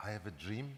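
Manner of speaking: mild, gentle, soft delivery. Recounting answering people who ask about Martin Luther King's famous speech, gentle voice. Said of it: "I respond in a gentle voice".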